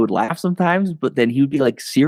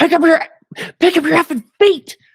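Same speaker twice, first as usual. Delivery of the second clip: put-on angry snapping outburst, much higher pitch; 4 dB louder than usual. Recalling losing patience with a man who shuffled, the speaker retells snapping angrily. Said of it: "and then I snapped".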